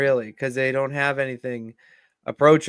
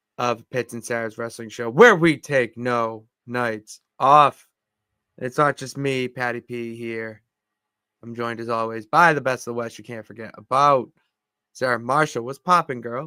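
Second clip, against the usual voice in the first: half-hearted, unenthusiastic, low-energy delivery. Host opens the wrestling show and greets the co-host, unenthusiastic. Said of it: "could not have said that opening like any more less enthusiastically".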